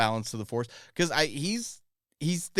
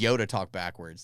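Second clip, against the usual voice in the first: normal talking voice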